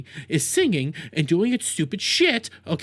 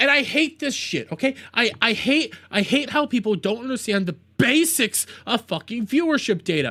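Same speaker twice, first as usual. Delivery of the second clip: high-pitched, heated ranting. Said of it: "that was me ranting".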